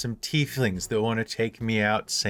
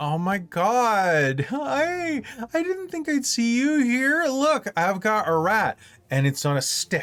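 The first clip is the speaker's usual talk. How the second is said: put-on very high, slurred, drawn-out tipsy drunken voice; 11 semitones higher than usual. Voicing Tally, who calls out while drunkenly sauntering over: drunk character voice. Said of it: "Tally is going to drunkenly saunter over".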